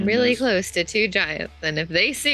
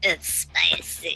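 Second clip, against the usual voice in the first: put-on croaky voice; 7 semitones lower, 5 dB quieter than usual. Imitating a meme guy who is dying: croaky meme voice. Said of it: "his voice is all croaky and stuff".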